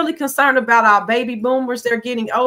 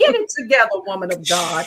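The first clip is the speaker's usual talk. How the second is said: pointed, animated, swooping, challenging tone; 4 semitones lower than usual. Retelling how Mama Connie challenged her about money: imitating Mama Connie challenging her. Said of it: "She's like".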